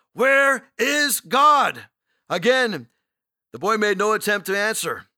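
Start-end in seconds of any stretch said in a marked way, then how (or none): 0.2-1.8 even sterner, demanding tone. Narrating a pastor repeating his question to a boy, in an even sterner voice. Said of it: "in an even sterner voice".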